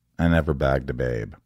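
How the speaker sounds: deadpan put-on character voice. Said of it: "It's so deadpan".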